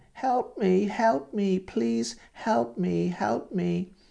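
mock very high, tearful, crying old woman voice. Retelling phone calls from an old lady: imitating an old lady crying. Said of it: "an old lady on the phone crying".

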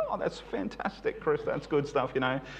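mock patronising, soft, humouring, condescending tone. Retelling how Tim answers when shown a Bible, mock-condescending Tim. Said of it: "he condescendingly listens to me".

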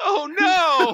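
mock screaming. Asked how he felt about the dog exploding, the speaker re-enacts retelling a scream. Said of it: "I think I screamed".

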